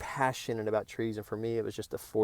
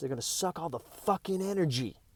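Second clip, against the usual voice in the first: mock high shout, punching stress on "energy"; 7 semitones higher, 3 dB quieter than usual. Retelling what a man said about pruning branches: imitating someone yelling, stress on ENERGY. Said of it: "And he yells".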